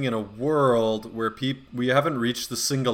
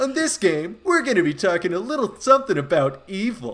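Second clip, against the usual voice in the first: mock, overenergetic, hyped announcer voice, higher pitch; 8 semitones higher, 3 dB louder than usual. Imitating an event announcer presenting a new game: imitating an overenergetic announcer. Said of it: "that voice is of that announcer who's like".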